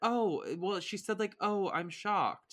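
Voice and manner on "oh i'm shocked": unsurprised, unimpressed fake shock. Retelling a reaction to breakup news: imitating Lori's unsurprised tone. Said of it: "the tone was like".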